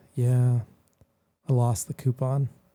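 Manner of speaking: put-on sad child voice. Retelling a coupon story, the speaker quotes the six-year-old: imitating Augie's put-on sadness. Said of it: "Augie puts on the uh, sad face".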